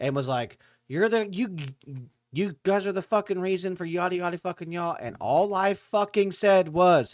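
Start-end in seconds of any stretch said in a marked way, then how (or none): 0.9-5.0 put-on furious rant, yelled, stammering over words. Retelling how a man across the road screamed at them: imitating someone screaming. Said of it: "screaming at us".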